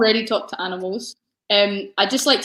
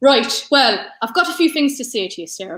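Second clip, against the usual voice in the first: put-on Irish accent, done for show. Asked on a live show for an Irish accent, addressing a co-host: Irish accent. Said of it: "give me your Irish accent then".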